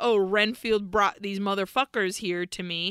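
ordinary talk

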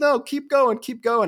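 loud, high, pressing tone.

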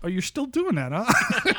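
startled, shocked disbelief, high and loud. Act out how people respond to you making a living as a bagpiper, imitating a shocked voice. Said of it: "I can always sense the shock in their voice".

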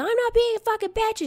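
shrill, very high screaming. Retelling a friend screaming back during a fight: imitating a friend screaming. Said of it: "She's screaming at me".

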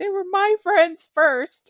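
put-on very high, squeaky baby voice. Retelling a favorite episode moment: Fran baby voice. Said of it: "Fran does, like, the baby voice".

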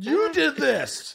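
very high, crying, tearful furious outburst. Retelling a childhood outburst of blaming him, imitating angry crying. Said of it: "storming out of the room and crying".

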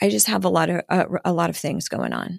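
put-on, very calm mimicked tone. Quoting how her husband describes being overwhelmed, retelling it very calmly. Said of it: "he'll say very calmly".

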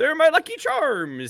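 squeaky, very high, put-on leprechaun voice. Speaker plays out a bit as a leprechaun, in a leprechaun voice. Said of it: "Give me a leprechaun telling you".

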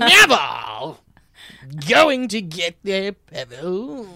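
bored, put-on cartoon villain voice. Retelling a movie scene, doing a Tim Curry impression. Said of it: "that's a really good Tim Curry".

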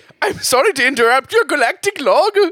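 high, put-on Scottish accent. Crew member interrupting the captain in an improvised space log scene, in a scottish accent. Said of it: "is that a Scottish accent?".

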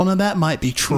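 normal talking voice

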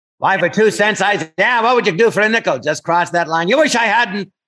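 put-on 1940s movie gangster voice. Speaker shows the gangster voices friends traded back and forth, in a 1940s movie gangster voice. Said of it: "why do they always talk like that?".

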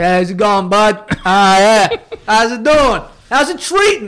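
put-on New York accent, out the side of the mouth. Teasing someone about how they talk in an Uber, put-on New York accent. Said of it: "you put on this accent and you talk out of the side of your mouth".

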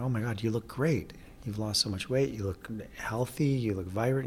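ordinary delivery

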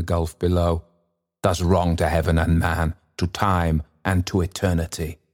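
plain

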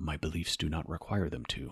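eloquent, succinct character voice, every word carefully placed. Speaker quotes a reply from the second Matrix movie: Morpheus voice. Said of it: "That was my Morpheus voice".

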